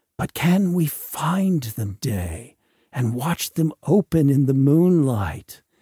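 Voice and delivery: plain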